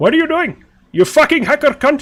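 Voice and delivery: very high, loud, poorly done put-on Indian accent. Speaker retries a line after saying he can't get it right, attempted indian accent. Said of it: "I can't get the Indian accent right".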